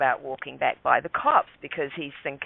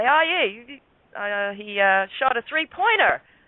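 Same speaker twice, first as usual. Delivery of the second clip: put-on cheerful tone, pitched higher; 6 semitones higher than usual. Retelling what was said to the cops: retelling own cheerful line. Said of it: "so I cheerfully say".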